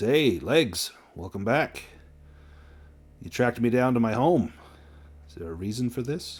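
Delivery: suggestive, leering voice. Voicing a character who greets a player at his home: Joey, leering and smiling. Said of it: "he's kind of leering at you, and he smiles with his golden smile and says".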